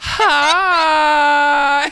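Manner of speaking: very high, drawn-out, squeaky voice. Recounting strolling in to make everybody uncomfortable, retelling a very high-pitched hi. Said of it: "My voice went up like three octaves".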